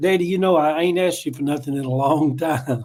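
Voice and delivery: plain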